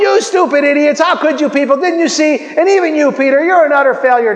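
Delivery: mock harsh, angry, scolding, berating yell. Describing what did not happen in the boat: imitating someone yelling. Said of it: "start yelling".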